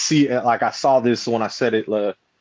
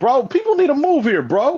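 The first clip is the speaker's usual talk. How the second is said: mock very high, swooping, angry outburst; 3 dB louder than usual. Retelling what was said to the man who blocked the car: retelling angry words. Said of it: "I was pissed".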